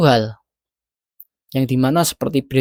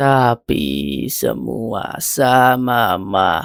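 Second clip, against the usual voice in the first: very slow, careful, deliberate speech. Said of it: "melatih bicara seperti ini".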